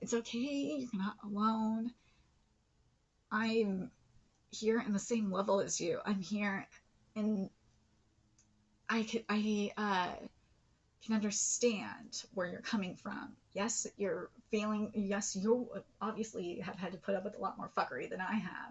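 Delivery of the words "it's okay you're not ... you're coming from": choked up, on the verge of crying. Reacting to a powerful moment, about to cry. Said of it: "I'm gonna cry because this is powerful".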